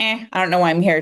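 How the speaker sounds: pretend bored tone. Asking the audience their excitement level, acting out a one: mock bored. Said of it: "One being like".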